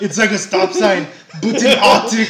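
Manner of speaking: very loud, booming voice at full volume. Retelling a comedy bit done as Arnold Schwarzenegger: Arnold Schwarzenegger voice. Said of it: "as Arnold Schwarzenegger".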